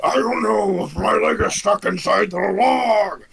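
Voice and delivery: high, slow, creaky, lumbering big orc voice, dragged out. Voicing the big orc with his leg stuck: big orc voice. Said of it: "the big orc, orc goes".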